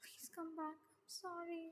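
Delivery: muttering under breath. Reading a story aloud where a character apologizes alone on a rooftop: muttering under his breath. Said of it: "Tang mutters under his breath".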